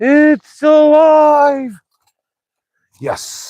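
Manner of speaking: very loud, very high excited shout, stretched out. Speaker finds the thing they have been fixing finally works: excited loud outburst. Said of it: "sorry for getting a little loud there".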